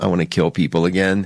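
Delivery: ordinary talk, nothing marked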